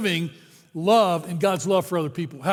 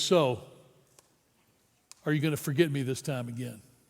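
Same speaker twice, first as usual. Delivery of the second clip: mock serious tone, lower and quieter; 5 semitones lower, 7 dB quieter than usual. Retelling a question asked while saying goodbye: imitating a serious tone. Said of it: "he was real serious, not even a smile".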